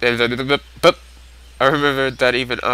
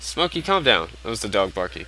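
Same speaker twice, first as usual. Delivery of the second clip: plain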